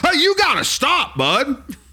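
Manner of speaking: stern, slow, angry American dad voice. Imagining how a typical American dad would react, imitating a furious American dad. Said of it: "just a typical American dad would be furious".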